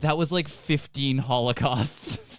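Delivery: normal talking voice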